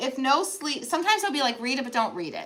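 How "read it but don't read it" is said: usual speaking voice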